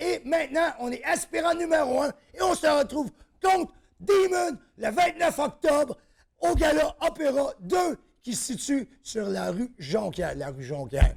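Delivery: getting fired up. Announcing his upcoming fight and getting carried away, worked up. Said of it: "je me suis emporté".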